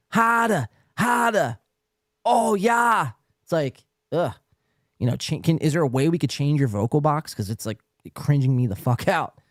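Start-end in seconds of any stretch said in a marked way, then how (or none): 0.1-3.1 put-on very high, slow, very drawn-out Boston accent. Mocking how people from Boston talk: put-on Boston accent. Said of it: "same thing with Boston accents".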